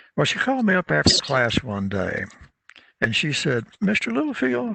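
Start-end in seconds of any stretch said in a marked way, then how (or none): 3.8-4.8 small, cracked voice, very high-pitched. Recalling a woman who called him after class, saying his name: imitating a little cracked voice. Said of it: "she had this little cracked voice".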